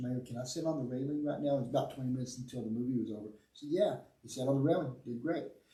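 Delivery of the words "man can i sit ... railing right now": hushed half-whisper under the breath. Retelling what a child said during the movie: imitating someone half-whispering. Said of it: "he whispers".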